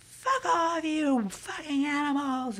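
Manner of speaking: crazed, wild, very high-pitched shrieking scream. Retelling a drag queen getting up at another table: retelling a scream. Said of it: "And like screaming like crazy".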